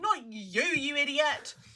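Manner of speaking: very high-pitched, loud, drawn-out scolding tone. Retelling the dog jumping on the bed: retelling telling off the dog. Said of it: "and I'm like".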